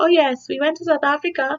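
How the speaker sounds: put-on nonchalant tone. Pretending to drop a trip casually, put-on nonchalant tone. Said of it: "just, like, nonchalant".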